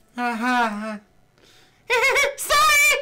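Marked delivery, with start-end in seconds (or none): 2.4-3.0 put-on high giggling girl voice. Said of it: "go back to the shitty voice".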